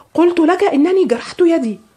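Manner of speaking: very high shouted crying out. Reading Leonard's answer to his questioner in a story, shouting. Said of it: "فصاح ليونارد".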